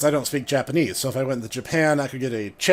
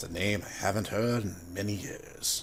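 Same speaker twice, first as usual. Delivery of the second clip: put-on low, hushed, soft wise-mentor voice, deliberately bad; 6 semitones lower, 12 dB quieter than usual. Having an Obi-Wan moment, doing a terrible Obi-Wan impression. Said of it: "That's a terrible impression".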